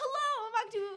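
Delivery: high, loud, perky news anchor voice. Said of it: "Logan was super monotoned".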